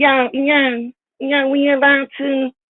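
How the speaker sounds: tiny, squeaky voice, very high and slow. Mocking a rival's way of talking: imitating a squeaky voice. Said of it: "you know his little squeaky".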